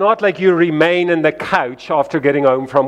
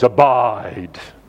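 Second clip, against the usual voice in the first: weighty, spiritual, drawn-out preacher voice on abide; 6 semitones lower than usual. Sermon example of overemphasizing a word: preacher's voice on abide. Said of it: "I emphasize the word abide with like a preacher's voice".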